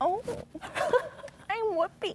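deliberately bad, soft and very high voice. Asked for your worst impression, show the other version: a quiet bad Whoopi impression. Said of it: "This is a quiet bad Whoopi".

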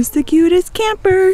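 put-on high, loud, cooing baby-talk voice.

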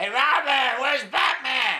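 put-on shrill, booming, high, loud drunken yell. Retelling a drunk man yelling out at the speaker, imitating a drunk yelling. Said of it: "the one drunk yelling out".

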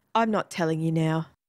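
ordinary delivery, nothing marked

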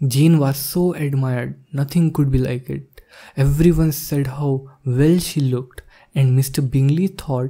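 plain

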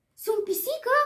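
high-pitched, surprised exclamation. Princess Sofia looks down at herself and gives a surprised exclamation. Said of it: "Exclamă ea surprinsă".

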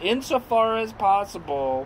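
very loud, high-pitched scornful sneer. The veteran, who had not slept, throws the words back, sneering. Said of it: "sneered the veteran".

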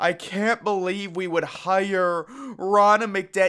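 high, slow, drawn-out, over-the-top fake hysterical sobbing. Mocking a TV host's fake hysterical crying on air: imitating fake hysterical crying. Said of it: "fake hysterical crying where she's like".

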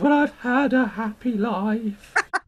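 slow, cultured, high voice, drawn out. Retelling what he said when asked: Mister Grace voice. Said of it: "He sounded like Mister Grace from Grace Brothers".

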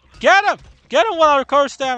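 very high-pitched, loud shouting yell. Gamer just spat on by an infected enemy, telling a teammate to get him, shouting. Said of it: "I'm shouting because".

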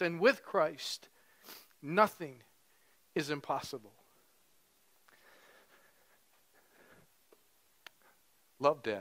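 weeping through the words, crying voice. Reading aloud a letter from their father, crying while reading. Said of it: "I didn't cry like this when I practiced".

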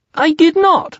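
very high, loud, squeaky protesting voice. Blamed for something, a character denies it, squeaking. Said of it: "squeaked Piglet".

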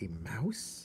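muttering. A king looks at a mouse in his daughter's hand, muttering. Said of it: "he muttered".

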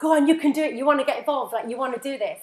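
play-acted, shouting out loudly. Retelling urging someone on at the screen: retelling a shout at the screen. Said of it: "shouting at the screen".

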